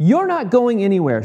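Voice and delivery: sudden, high, loud exclamation. A mother grabs her son's arm as he tries to leave, crying out. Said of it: "she cried".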